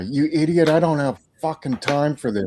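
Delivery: enraged, furious screamed outburst. Recounting how Dan screamed at a guy, retelling furious screaming. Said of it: "Dan just fucking screams at the fucking guy".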